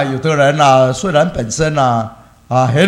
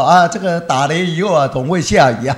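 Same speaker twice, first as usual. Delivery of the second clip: ordinary talk, nothing marked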